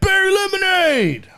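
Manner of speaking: very high, shrill, jeering heckling yell. Retelling a heckler at the show: imitating a heckler yelling. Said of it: "He's like".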